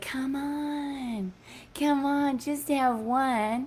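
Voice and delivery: coaxing, tempting slow monster voice, "on" drawn out. Voicing the addictive beast in your head urging a drink: Nicorette commercial beast voice. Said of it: "this beast, you know, is like".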